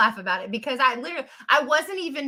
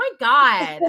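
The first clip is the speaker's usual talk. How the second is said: put-on Valley Girl accent; 5 dB louder than usual. Imagining how readers would react to a mistake, Valley Girl accent. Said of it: "In my best Valley Girl accent".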